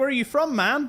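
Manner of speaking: clumsy put-on American accent. Retelling someone asking where the speaker is from, in a bad american accent. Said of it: "I can't do an American accent".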